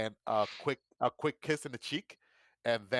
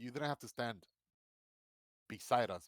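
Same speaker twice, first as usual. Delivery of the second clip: mock-sincere voice, low and steady; 6 dB quieter than usual. Retelling what she said, imitating a low, steady voice. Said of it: "she lowers her voice like, you know, low and steady".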